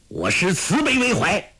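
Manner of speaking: thunderous, rolling voice, pitched high. The fool answers the question put to him, in a thunderous voice. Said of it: "声如雷霆说道".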